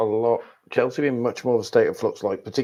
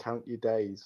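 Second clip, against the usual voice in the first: put-on hushed, half-whispered West London accent; 10 dB quieter than usual. Imagining a face at the window at night, like a horror film; imitating Rose half-whispering, West London accent. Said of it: "just whispering in a West London accent".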